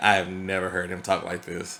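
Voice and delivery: ordinary talk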